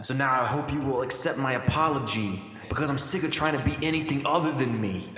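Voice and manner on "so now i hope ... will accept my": usual speaking voice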